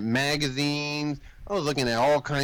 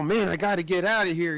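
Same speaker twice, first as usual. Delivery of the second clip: put-on panicked, freaking-out voice, higher pitch; 3 semitones higher than usual. Retelling a movie scene, the jailed hero's line: imitating someone freaking out. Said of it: "He's all freaking out".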